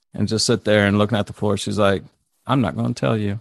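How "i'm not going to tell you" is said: mock dead-level, toneless, flat monotone. Speaker retelling a woman's reply in a conversation: imitating her monotone. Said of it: "Just very monotone like that".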